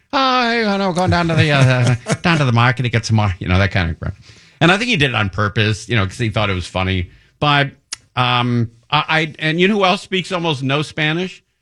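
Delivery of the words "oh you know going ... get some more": put-on Irish accent slipping out, pitched up. Retelling how a grandfather sounded after a couple of beers: imitating grandfather's Irish accent. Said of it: "he could say some Irish".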